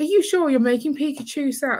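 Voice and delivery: mock, very high, pushy guilt-trip laid on thick. Retelling the raffle seller pressing parents: imitating a pushy guilt-trip. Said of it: "laying it on thick".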